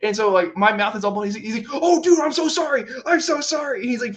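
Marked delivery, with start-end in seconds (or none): 1.8-3.8 high, flustered, panicked, apologetic blurt. Retelling how someone apologized after bloodying a mouth, imitating panicked apology. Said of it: "freaking out".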